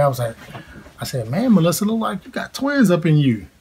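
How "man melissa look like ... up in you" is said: high, playful teasing jab. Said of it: "making fun of her in a good way".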